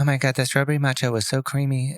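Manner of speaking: deadpan, flat, monotone influencer voice. Mocking viral food reviewers with friends, in a monotone influencer voice. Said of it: "these monotone things".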